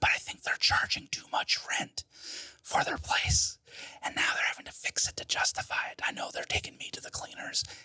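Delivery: hushed, quiet whisper. Whispering about the people renting the apartment, who are outside the door: whispering. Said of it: "I'm just whispering because they're outside my door".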